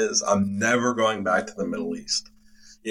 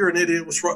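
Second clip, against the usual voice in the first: yelling, higher; 9 semitones higher than usual. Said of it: "all these other two voices are yelling at me".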